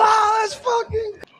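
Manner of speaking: very high, shouted scream. Speaker recalls their first phone conversation, reenacting a scream. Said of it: "I was screaming on the phone".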